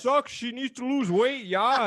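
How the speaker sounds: put-on, very high, loud northern Canadian accent. Speaker mimicking northern guys giving chirps, imitating a northern accent. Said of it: "hearing like the northern accent".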